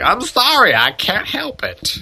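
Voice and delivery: very high, very slow, swooping, drawn-out rural country voice. Voicing the character Nee in a scene, in a redneck voice. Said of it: "I turned Nee into a redneck just now".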